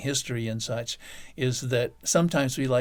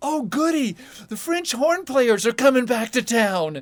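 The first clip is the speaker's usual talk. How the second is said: put-on delighted shout, very high-pitched and loud; 11 semitones higher, 6 dB louder than usual. Retelling visitors asking about the summer festival, one shouting to the other: imitating a gleeful shout. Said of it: "in this gleeful voice shouts".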